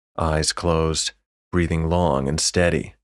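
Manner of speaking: ordinary delivery, nothing marked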